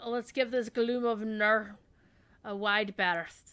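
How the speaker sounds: put-on Scottish-Russian accent. Speaker quotes Sean Connery, doing Sean Connery's bad Russian accent. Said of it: "the worst Scottish Russian accent ever".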